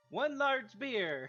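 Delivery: in-character shout. Calling out for a beer as a character: character shouting. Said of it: "Echo shouts".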